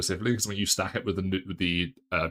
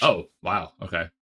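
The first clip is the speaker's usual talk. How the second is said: feigned amazement, dry and sarcastic; 2 semitones lower than usual. Reacting to hearing that nothing was changed: sarcastic. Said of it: "Are you being sarcastic?".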